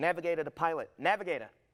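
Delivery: loud, high-pitched Boston American accent. Asked to drop the London accent, the speaker delivers one of their lines in an American accent. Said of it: "give us some American?".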